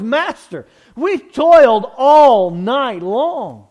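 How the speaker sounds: annoyed, very drawn out. Speaker telling the story, voicing Peter's reply to Jesus in an annoyed voice. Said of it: "You can hear the annoyance in Peter's voice".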